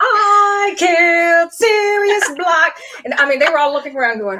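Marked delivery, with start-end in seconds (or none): 0.0-2.8 very slow, high scream, "I" long drawn. Retelling skipping up to a costume contest stage: imitating screaming as Bellatrix. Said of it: "start skipping up to the stage screaming".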